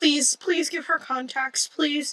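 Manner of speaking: high, pleading, begging over and over. Imitating a viewer begging for someone to get contacts: imitating a pleading viewer. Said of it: "someone out there looking at me right now going".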